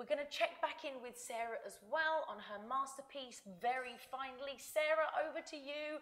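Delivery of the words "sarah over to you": loud, high, stretched yell. Handing over on camera to someone sitting right beside them: shouting. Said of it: "I don't know why I'm shouting".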